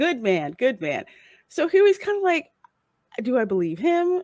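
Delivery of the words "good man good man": acted patronizing, condescending tone. Recapping a scene, acting out one character's remark to another, mock-condescending.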